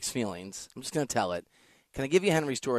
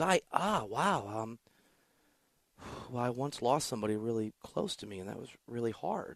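startled, flustered, stumbling, groping for words; 7 dB quieter than usual. Retelling how a nurse answered a misheard question: imitating a startled nurse. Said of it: "makes this startled look and goes".

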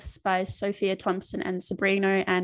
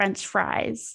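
French fries said in an American accent. Asked by the other speaker to try saying a phrase in an American accent. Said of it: "now you try to do an American accent and say French fries".

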